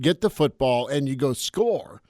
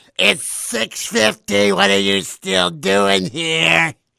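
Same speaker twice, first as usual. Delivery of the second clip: slow, rasping demonic voice; 5 semitones higher, 4 dB louder than usual. Retelling what his wife says when he oversleeps, imitating wife, Exorcist-like voice. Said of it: "The fact that your wife sounds like that is concerning".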